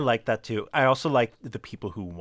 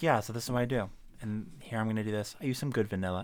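down-to-earth, chill, easy cooking-show voice; 7 dB quieter than usual. Showing how the TV cook talks down to earth: Ina Garten impression. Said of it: "She's like".

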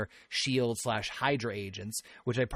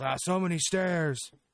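yelling, pitched higher; 6 semitones higher than usual. Retelling a movie scene where Hulk is told to take the stairs: imitating Hulk yelling. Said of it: "and he yells".

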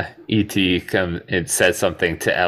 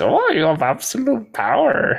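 very high sing-song voice, pitch swinging. Retelling a movie scene where the brother repeats a line: Yoda voice. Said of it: "in Yoda's voice".

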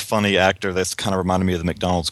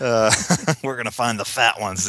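put-on voice of an old man; 3 semitones higher than usual. Discussing a movie, quoting a character's line in an old man voice. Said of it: "he had the old man voice saying it".

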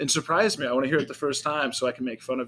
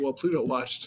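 plain

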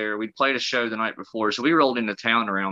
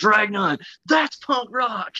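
put-on very high, shrill yell; 11 semitones higher, 3 dB louder than usual. Telling how he puked while driving to a gig, the speaker acts out someone yelling from a van: retelling a yell. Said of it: "he yells out the thing".

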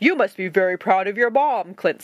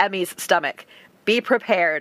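plain reading voice

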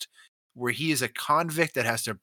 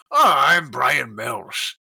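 loud, very drawn-out, gruff put-on American accent; 8 dB louder than usual. Imitating how the accent started out in Taken: Liam Neeson gruff American accent. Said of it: "gruff American where he's like".

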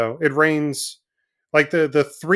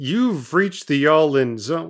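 pretend television narrator voice. Opening the show in a Twilight Zone narrator trance: Rod Serling voice. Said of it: "caught a little Rod Serling".

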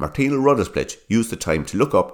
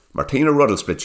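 ordinary delivery

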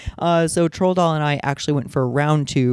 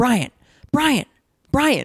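yelling again and again; 9 semitones higher than usual. Retelling Troll Doll yelling at his boyfriend: imitating Troll Doll yelling. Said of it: "is now yelling at him".

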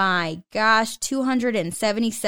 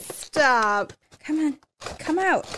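close to crying with excitement, on the verge of tears; 4 semitones higher than usual. Opening the first flap in front of viewers, on the verge of tears. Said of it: "I'm actually going to cry".

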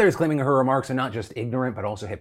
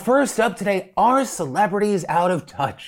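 arch, sarcastic tone, pitched up; 7 semitones higher than usual. Show host opening the first story of the day, asking sarcastically. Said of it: "He asked sarcastically".

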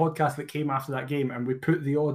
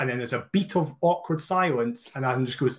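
normal talking voice

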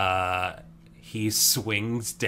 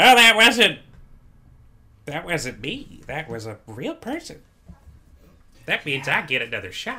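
put-on drunk halfling voice, slurring, higher and louder; 8 semitones higher, 8 dB louder than usual. Voicing a very drunk halfling answering the party: drunk halfling voice. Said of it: "You see a very drunk halfling, like".

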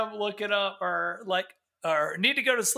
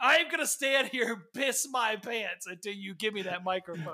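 mock menacing, threatening tone. Acting out a man threatening to wet himself for the microphone: imitating a threat. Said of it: "I think it's a threat".

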